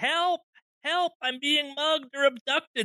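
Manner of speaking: very high, full-lunged, drawn-out scream. Narrator voices a man calling out that he is being mugged, yelling at top of lungs. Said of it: "just kind of yelling at the top of his lungs".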